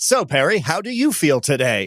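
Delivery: fake radio announcer delivery. Joking about putting on a voice near a microphone: put-on podcast voice. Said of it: "I put on this voice".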